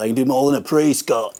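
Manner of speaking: put-on loud, high Australian accent. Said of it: "Was that an Australian accent?".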